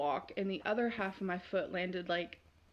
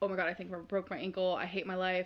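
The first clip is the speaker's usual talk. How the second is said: normal talking voice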